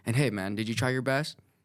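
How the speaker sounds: usual speaking voice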